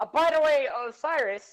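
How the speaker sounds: hasty, loud, high-pitched yell. Mid-conversation, the speaker calls out to Osiris, yelling. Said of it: "sorry for my yelling".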